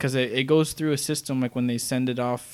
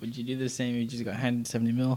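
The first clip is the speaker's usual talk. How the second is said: ordinary talk, nothing marked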